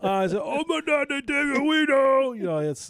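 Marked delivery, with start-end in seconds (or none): 0.4-2.4 put-on very high, loud, drawn-out baby talk. Retelling what you said on seeing the dog, in your dog voice. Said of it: "your dog voice".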